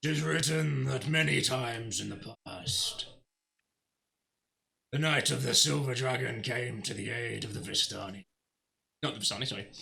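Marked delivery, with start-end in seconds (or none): 0.0-8.3 growled, rough in the throat. Voicing a figure heard from outside: deep, low growling voice. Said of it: "Hear a deep, low growl of a voice".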